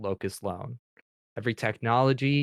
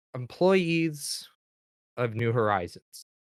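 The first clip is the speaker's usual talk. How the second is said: slow, distorted intercom voice; 3 semitones higher than usual. Voicing a message over the intercom: distorted intercom voice. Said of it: "sounds distorted to no end".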